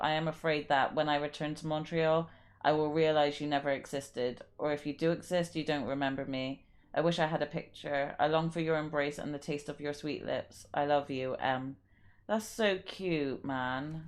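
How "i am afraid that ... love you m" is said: ordinary talk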